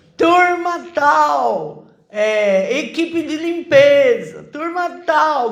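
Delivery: shouting. Retelling calling out the cleaning team at a baptism meal: imitating own past shouting. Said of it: "comecei a gritar".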